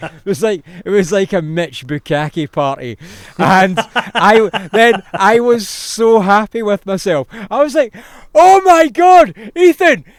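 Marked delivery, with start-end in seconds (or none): 8.3-10.0 put-on shouting, much higher, louder. Retelling spraying Ethan on a wave and shouting at him, retelling a shout. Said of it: "I'm shouting at him".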